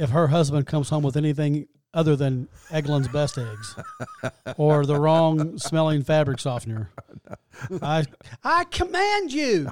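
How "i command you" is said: put-on very high, very slow, swooping, drawn-out yell. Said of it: "could you imagine being married to that voice?".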